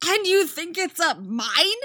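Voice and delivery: shrill, very loud, high exclamation. Replying to her companion's remark, a young woman exclaiming. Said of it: "Artemis exclaims".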